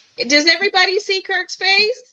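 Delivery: talking loudly. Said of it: "I'm yelling like".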